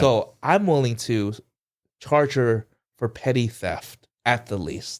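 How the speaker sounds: normal talking voice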